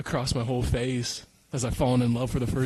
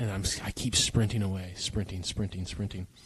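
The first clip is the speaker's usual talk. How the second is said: ordinary delivery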